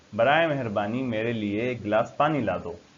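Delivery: ordinary talk, nothing marked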